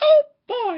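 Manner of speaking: very high, loud, squeaky cartoon voice. After a failed try, speaker says he can do better: better Mickey Mouse impression. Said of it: "That's better".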